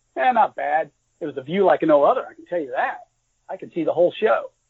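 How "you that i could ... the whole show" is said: ordinary delivery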